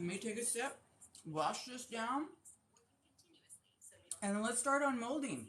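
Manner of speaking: speaking with food in mouth. Eating while talking, before taking a sip, talking with mouth full. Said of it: "as I'm talking with my mouth full".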